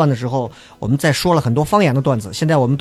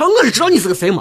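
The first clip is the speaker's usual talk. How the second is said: high, argumentative, bickering local dialect; 9 semitones higher than usual. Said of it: "方言的这种怼".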